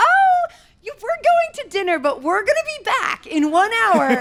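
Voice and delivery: very high, polite, flustered voice. Retelling mom politely refusing a scarf seller: imitating a polite flustered mom. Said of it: "she's like".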